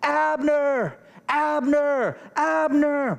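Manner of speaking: yelling out.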